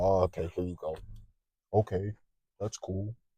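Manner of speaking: mock unenthused, dull, sarcastic reaction. Warning listeners not to share their results, mocking a dull, sarcastic reply. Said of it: "Real sarcastic".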